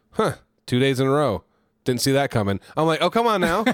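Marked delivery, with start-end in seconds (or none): 0.2-2.6 dry, expressionless, flat deadpan delivery. Quoting the front-counter worker who looked at you; imitating Emerald's deadpan. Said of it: "she's so like just deadpan".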